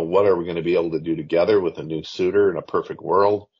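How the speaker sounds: ordinary delivery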